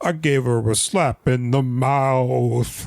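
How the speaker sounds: put-on tough-guy comic voice. Quoting a famous comedy bit: Andrew Dice Clay voice. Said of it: "It's Andrew Dice Clay from his famous bit".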